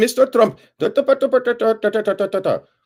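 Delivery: very high, put-on Indian accent, reporter-style babble. Retelling a reporter asking a question: imitating an Indian reporter's accent. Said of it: "the Indian, uh, reporter".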